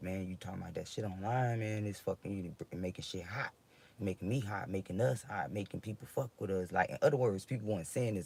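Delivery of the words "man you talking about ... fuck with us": plain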